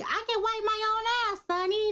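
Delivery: put-on very high, piped-up tiny little boy voice. Noting how he sounds, the speaker quotes: Big Daddy little boy voice. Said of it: "I sound like the little boy off of um".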